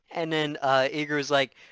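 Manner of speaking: ordinary delivery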